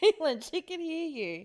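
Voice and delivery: high, urgent, scolding yell. Retelling own warning to Caitlin in a car: imitating own past yelling.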